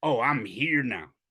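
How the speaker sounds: cocky, self-satisfied, slow smug delivery. Retelling how another coach announced he was here now: imitating the other coach's smug tone. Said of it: "the way he said it was like".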